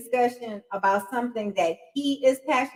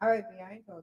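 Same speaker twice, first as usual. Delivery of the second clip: voice brought all the way down, low and hushed; 4 semitones lower, 7 dB quieter than usual. The speaker acts out answering B after being told off: lowered voice. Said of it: "I lower my voice all the way down here".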